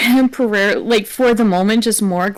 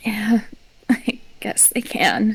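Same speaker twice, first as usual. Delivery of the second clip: soft words spoken through a dry little laugh; 5 dB quieter than usual. Voicing a character answering her sister with a dry chuckle. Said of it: "slightly dry chuckle in response".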